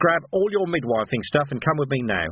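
ordinary delivery

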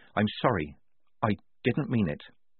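plain

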